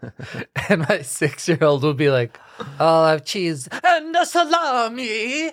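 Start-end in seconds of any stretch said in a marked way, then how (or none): 2.8-5.5 put-on high, slow, aggressive Italian accent. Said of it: "very specific, aggressive way that I pronounce it".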